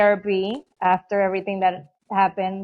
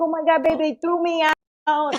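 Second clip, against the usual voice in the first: mock sobbing through tears, tearful and crying; 7 semitones higher than usual. Retelling what a crying partner said after being sent out: imitating someone crying. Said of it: "And so he's crying".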